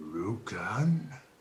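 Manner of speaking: gurgling, bubbling voice. Voicing a creature turning its head to a visitor: gurgly voice. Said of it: "in a gurgly voice".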